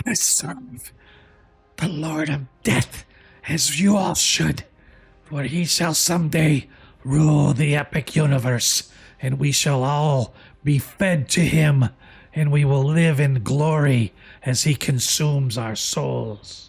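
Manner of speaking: hoarse, raspy, cough-like whispering voice. Voicing a creature addressing everyone at the table, in a hoarse coughing whisper. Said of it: "it just whispers in a hoarse sort of cough".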